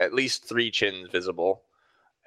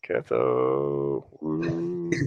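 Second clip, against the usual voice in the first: very low pitch, one word stretched out; 7 semitones lower than usual. Retelling what the masked tall guy said on recognizing the speaker, in a really soft voice. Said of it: "in a really soft voice".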